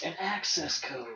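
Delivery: very quiet, hushed, repeated words. Acting out a codec call, echoing the last words the way Snake does. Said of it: "that's the way Snake talks to people".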